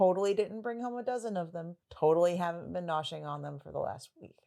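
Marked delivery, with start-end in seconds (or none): none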